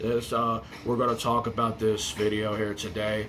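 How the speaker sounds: low, droning mock monotone with zero energy. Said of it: "and you sound like this?".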